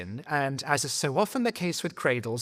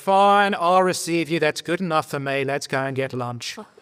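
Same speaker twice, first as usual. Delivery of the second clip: firm, raised, put-on Australian accent; 5 dB louder than usual. Retelling what Don told the speaker about receiving him; imitating Don's Australian accent. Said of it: "he's Australian, that's why I'm doing that voice".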